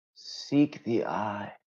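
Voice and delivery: trance-like voice. A game master voices a character who seems in a trance, answering a question: trance-like voice. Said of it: "He seems to be in some sort of trance".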